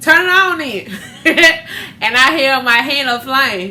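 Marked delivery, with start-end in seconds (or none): 0.0-0.9 put-on high, loud cocky kid voice. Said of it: "My little ignorant self go".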